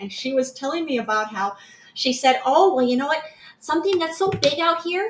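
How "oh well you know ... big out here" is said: put-on, pitched-up Wisconsin accent. Retelling what the speaker's sister said, imitating a Wisconsin accent. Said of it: "with her adorable Wisconsin accent".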